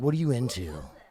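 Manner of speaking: firm, confident, in-charge, authoritative tone. Showing the right way to ask a partner something: authoritative question. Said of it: "you gotta be authoritative with your questions".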